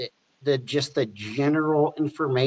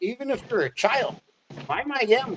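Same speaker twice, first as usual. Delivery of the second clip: high, mocking huckster-style rant; 9 semitones higher than usual. Mocking someone called the quack who blames average people: mocking imitation of the quack ranting. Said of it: "He's like".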